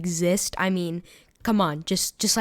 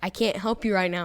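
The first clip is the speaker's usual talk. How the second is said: ordinary talk, nothing marked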